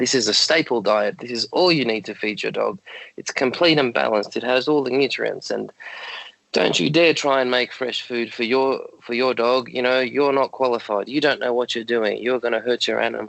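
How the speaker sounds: normal talking voice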